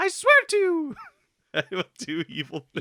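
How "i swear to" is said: very high, swooping put-on voice. Imagining Mario turning to the dark side and swearing an oath: very high Mario voice. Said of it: "in his very high Mario voice".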